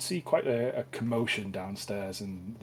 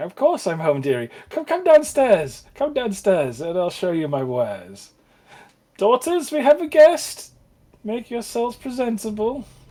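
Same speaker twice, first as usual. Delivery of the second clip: very high, very loud, shrill, swooping cackle; 12 semitones higher, 15 dB louder than usual. Narrator voicing a woman who greets a guest at her home, cackling. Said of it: "she would start cackling and saying".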